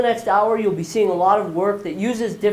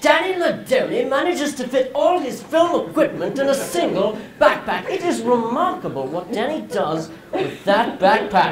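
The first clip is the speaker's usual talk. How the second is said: put-on British accent held all the way through; 3 semitones higher than usual. Imagining what a man was saying aloud about Danny Ladoni, in a British accent. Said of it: "in his British accent".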